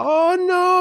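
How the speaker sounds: very high, soft-spoken voice. Describing a fighter as a sweet, nice guy: Anderson Silva impression. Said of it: "kind of a higher pitched voice".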